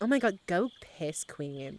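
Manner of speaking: put-on Valley Girl voice. Teased about a habit, speaker breaks into the valley girl accent at a friend. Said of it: "a Valley Girl accent?".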